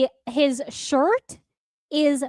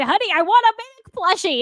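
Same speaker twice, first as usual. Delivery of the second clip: high, super excited, eager voice; 6 semitones higher than usual. Recounting running up to him and asking for a plushie, retelling in a super excited way. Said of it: "in my super excited way".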